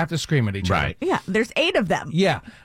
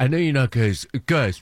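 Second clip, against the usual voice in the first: put-on cool-dad voice; 4 semitones lower than usual. Teasing another speaker about how he sounded: mock cool-dad voice. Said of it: "you sound like the cool dad".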